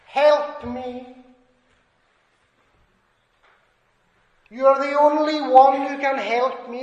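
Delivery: put-on desperate crying out. Speaker acts out a humbled man on his knees, crying out for help. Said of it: "he's crying out to the Lord Jesus".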